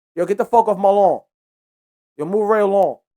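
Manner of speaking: put-on New York accent, city guy sound. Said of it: "they don't probably sound like that in New York".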